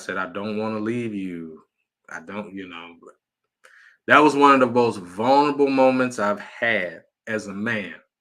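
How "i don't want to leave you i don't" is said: put-on tearful voice, lower and quieter. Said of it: "and I cried".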